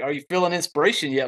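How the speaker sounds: put-on snarky, smart-aleck tone. Retelling what she said to James: imitating a smart-ass remark. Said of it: "kinda smart ass".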